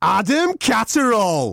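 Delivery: high, top-of-the-lungs yelling. Retelling how a fan in a packed lift area yelled: imitating someone yelling. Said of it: "yelled at the top of his voice".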